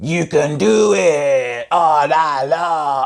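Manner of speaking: very slow, clumsy comic voice, every word drawn out. Recalling a film character's catchphrase: bad Rob Schneider impression. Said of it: "that was a bad impression".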